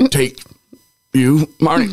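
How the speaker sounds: very high, small, choked-up crying voice. Retelling saying wedding vows to Marty, reenacting own little cry voice. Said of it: "like a little clear, like cry voice".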